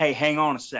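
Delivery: put-on voice like a man on the radio. Retelling George telling them over the radio to wait: impersonating George. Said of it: "my best impersonation of him".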